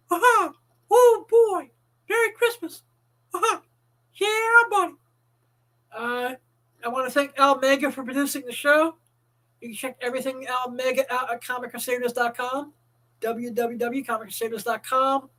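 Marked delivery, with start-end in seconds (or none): 0.1-4.9 high-pitched cartoon mouse character voice. Offering holiday greeting videos, showing a sample: Mickey Mouse voice. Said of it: "in the Mickey Mouse voice".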